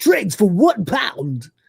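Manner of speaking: confident, punchy, swooping DJ voice, every word hit. Showing what your DJ voice sounds like: confident DJ voice. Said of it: "like when I do like my D J voice".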